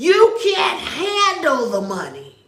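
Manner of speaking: slow, drawn-out, swooping movie-star voice. Asking the listener if they can handle it; Jack Nicholson voice. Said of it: "In my Jack Nicholson voice".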